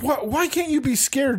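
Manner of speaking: mock-angry outburst. Retelling a story, voicing a man who got mad at her, retelling an angry outburst. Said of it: "he got mad at her and was like".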